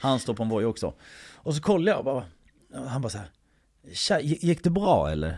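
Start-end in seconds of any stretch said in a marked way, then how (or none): 4.2-5.4 very thick Scanian dialect. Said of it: "jätteskånsk dialekt".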